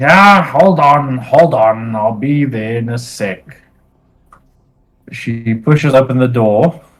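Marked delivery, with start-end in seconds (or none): 0.0-3.6 put-on elderly woman voice, calling out. A game master voices an older lady answering a knock from inside; older lady voice. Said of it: "an older lady whose voice comes from the inside".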